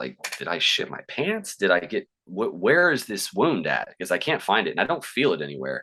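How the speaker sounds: normal talking voice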